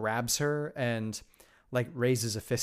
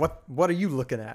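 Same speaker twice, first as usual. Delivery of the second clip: put-on angry cowboy voice, louder; 3 semitones higher, 4 dB louder than usual. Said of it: "the best cowboy fuck off".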